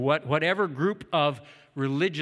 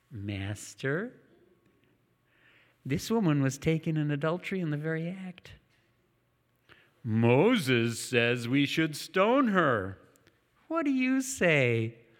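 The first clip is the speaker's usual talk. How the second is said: creepy, eerie, unsettling voice. Play a figure described as kind of like Gollum, addressing his master, in a Gollum-like voice. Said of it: "He's kind of like Gollum".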